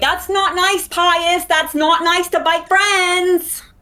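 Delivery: very high, very slow, drawn-out scolding shout. Yelling in character at a tower that tried to bite a friend: yelling at the tower. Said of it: "I just start yelling at the tower".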